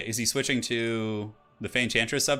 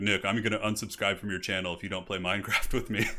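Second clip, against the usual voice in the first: really deep, low-pitched voice; 2 semitones lower than usual. Retelling what a friend used to say, imitating Matt's deep voice. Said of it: "he has this really, like, deep voice".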